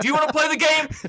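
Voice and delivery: acted-out very high, loud shriek. Retelling her reaction to unwanted game advice: imitating someone screaming. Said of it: "and screams at me".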